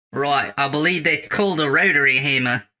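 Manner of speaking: poorly faked Australian accent. Voicing a character after being asked for the accent: bad Australian accent. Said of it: "do a regular Australian fucking accent".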